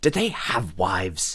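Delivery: secretive, confiding, conspiratorial, slow and very drawn out. Narrating a character who leans forward to ask a question: conspiratorial. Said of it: "leans forward conspiratorially".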